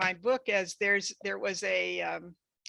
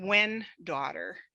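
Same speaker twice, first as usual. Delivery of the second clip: usual speaking voice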